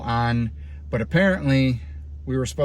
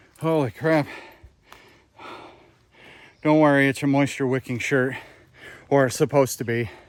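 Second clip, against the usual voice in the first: winded, catching breath. Hiker stopping on a new trail to catch breath. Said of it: "catch my breath".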